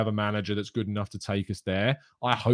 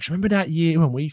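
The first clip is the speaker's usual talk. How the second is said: put-on, very high elderly voice. Imagining themselves at eighty looking back on a season: putting on an old voice. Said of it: "I'm putting on my old voice now".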